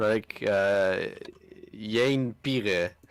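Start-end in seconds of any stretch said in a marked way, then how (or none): 1.8-2.9 put-on a name pronounced in a Dutch accent. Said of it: "or Dutchman".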